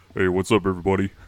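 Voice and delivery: put-on deep, booming baritone voice. Imitating how a young player talks: booming baritone impression. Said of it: "he talks like this".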